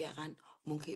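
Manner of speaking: soft, unvoiced, dropped-down whisper.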